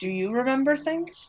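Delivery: very quiet, hushed private aside. Leaning toward the bird, a player's character asks it a question: very quiet voice. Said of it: "say very quietly".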